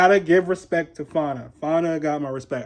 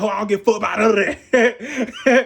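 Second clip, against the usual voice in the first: dismissive, offhand delivery, tossed off like nothing; 6 semitones higher than usual. Recounting a show episode, speaker repeats Kay Regan's line before a fight, imitating Kay Regan. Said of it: "just the way she said it".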